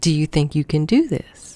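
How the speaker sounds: sugary-sweet, very sweet, quick voice. Retelling a question a woman asked, imitating her very sweet voice. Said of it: "in a very sweet voice".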